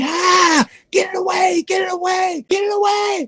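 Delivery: shrill, very high, drawn-out scream. Retelling a friend's reaction to being touched with a book: imitating someone screaming. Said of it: "He started screaming".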